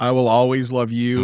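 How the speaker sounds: ordinary talk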